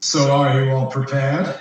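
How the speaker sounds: big, grand dragon voice. Voicing the dragon as he turns to address the whole group: big booming voice. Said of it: "big booming voice".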